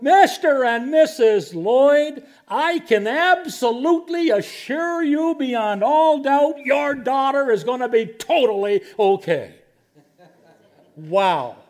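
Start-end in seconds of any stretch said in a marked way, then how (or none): 0.0-9.5 booming, very loud, high announcing voice. Retelling how a man trotted down the hall toward the parents, very loud voice. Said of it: "saying in a very loud voice".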